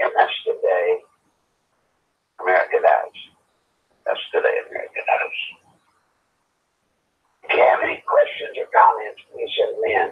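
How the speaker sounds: ragged voice. A show host inviting listener questions, with a ragged voice. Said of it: "my voice is so ragged".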